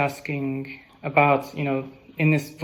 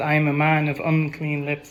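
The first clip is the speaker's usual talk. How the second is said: imitated panicked speech. Retelling how Isaiah confesses unworthiness: imitating panic. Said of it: "he's really panicking".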